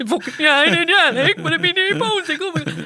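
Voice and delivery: near-tearful voice. Retelling a weigh-in where she answered the leader: imitating herself nearly crying. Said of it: "I'm now nearly crying".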